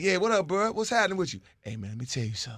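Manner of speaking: fake whispering. Imitating a brother who whispers on phone calls: imitating Zach Book whispering. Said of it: "he starts whispering".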